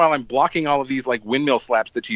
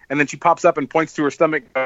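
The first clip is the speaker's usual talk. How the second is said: plain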